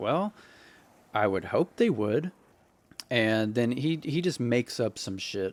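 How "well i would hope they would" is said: condescending, talking down, still polite on top. Retelling own reply to an officer: imitating own condescending tone. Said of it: "a condescending kind of tone".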